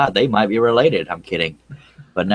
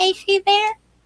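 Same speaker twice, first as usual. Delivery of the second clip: very high-pitched put-on small child's little girl voice. Phoning someone who would hang up on them otherwise: little girl voice. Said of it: "And I called using a little girl's voice".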